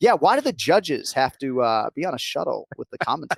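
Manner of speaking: put-on bone-dry deadpan delivery, fired straight back. Commentator retells a judge's answer to his question about the shuttle, mimicking a deadpan reply. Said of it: "sort of deadpan right back at me".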